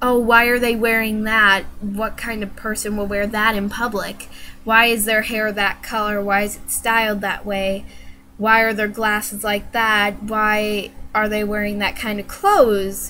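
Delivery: normal talking voice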